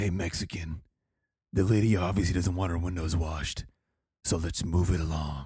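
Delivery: cool, low, calm action-star tough-guy voice. Retelling telling a man the lady doesn't want her windows washed; tough guy Hollywood voice. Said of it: "you did not use the tough guy Hollywood voice".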